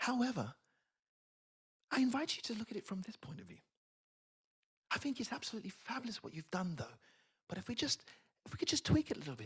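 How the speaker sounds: very soft, gentle, careful tone with lifted pitch. Demonstrating how people deliver a praise sandwich, in a very soft voice. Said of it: "They come to you with a very soft voice".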